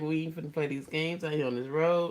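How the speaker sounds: normal talking voice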